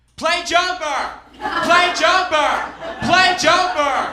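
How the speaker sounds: put-on very high, shrill, drawn-out drunken crowd screaming. Recalling hearing a band play new songs, the speaker is retelling drunken screaming. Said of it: "we just start screaming, drunk".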